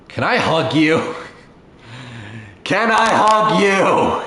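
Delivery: audible stage whisper. Role-playing a character who trots over and asks another for a hug, in a loud whisper. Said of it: "she whispers loudly".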